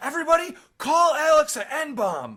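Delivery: high, loud screaming yell. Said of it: "me yelling and me screaming".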